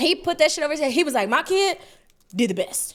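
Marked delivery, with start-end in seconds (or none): 1.3-2.9 put-on deep bass voice. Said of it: "with all the bass in his voice".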